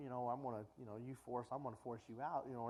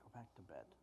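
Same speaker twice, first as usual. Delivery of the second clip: put-on irritated old man voice, lower and quieter; 6 semitones lower, 13 dB quieter than usual. Retelling Eli sending the boy back to bed: imitating irritated Eli. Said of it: "is kinda getting irritated".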